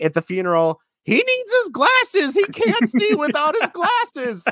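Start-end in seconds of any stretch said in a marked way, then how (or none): 1.0-4.4 very high, grieving leading-lady voice. Retelling a movie's funeral scene, imitating the leading actress. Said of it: "Which sounds probably horrible in my sick voice".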